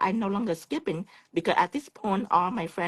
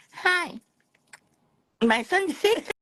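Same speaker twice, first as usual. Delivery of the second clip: very high, slow, put-on broken English voice; 12 semitones higher, 4 dB louder than usual. Retelling a phone call to the office, speaking put-on broken english. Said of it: "I give them a little broken English. I say".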